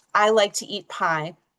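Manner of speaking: stress on I, the first word.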